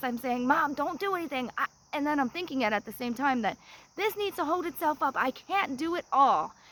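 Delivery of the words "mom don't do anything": acted-out urgent yelling, screamed. Retelling trying to hold up a log to help mom: retelling own screaming. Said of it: "So I'm screaming this and yelling this".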